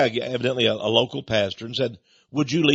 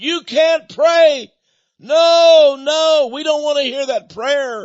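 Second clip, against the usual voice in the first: very high, piercing, drawn-out scream; 14 semitones higher, 7 dB louder than usual. Retelling how protesters at a town meeting reacted to prayer: imitating people screaming. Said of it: "some of them started screaming".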